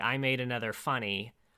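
plain

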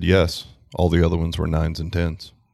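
mock flat deadpan delivery. Retelling a partner's reply to a question: imitating Andrea's deadpan. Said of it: "she deadpan looked me in the eye and said".

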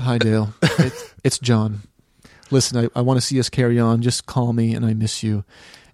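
put-on smoky, sultry voice. Retelling a shout-out a man gave the speaker's mom, imitating John's sultry, smoky voice. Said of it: "he has this really kind of sultry, smoky message".

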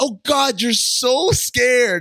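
put-on mocking tone. Recapping a couple's argument, quoting what he said to her: mockingly retelling a taunt.

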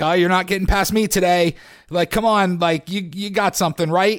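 playful, mock eager, excited good-natured teasing. Retelling a homeless man blocking the way for money: imitating someone playful and excited. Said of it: "sort of being playful".

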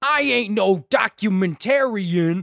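very slow cartoon cop voice, words stretched way out. Retelling a movie scene, quoting the cop: Foghorn Leghorn-style cop voice. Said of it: "Cop Horn Leghorn interrogating Jeff again".

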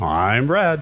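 announcer-style voice and delivery. A podcast co-host repeats his intro line to demonstrate it, in an announcer voice. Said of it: "I've developed a little bit of an announcer voice on that intro".

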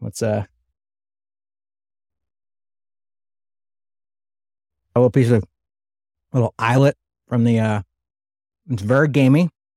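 speaking with mouth full of food. Eating a bowl of shoe chili on camera, talking with mouth full. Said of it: "I got to swallow this first".

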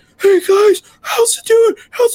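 very high, hoarse, strained yell. Recalling greeting people at a Maker Fair after losing their voice; acting out yelling with lost voice. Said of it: "Just still trying to yell".

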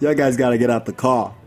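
normal talking voice

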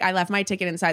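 plain

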